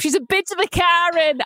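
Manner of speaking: put-on Irish-accented delivery. Echoing a British person's remark, imitating an Irish accent. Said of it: "I made you Irish in my imitation".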